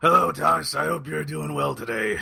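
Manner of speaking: hoarse, rough voice. Greeting the host on a podcast, sore-throat voice. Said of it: "You sound like you've got a bit of a sore throat".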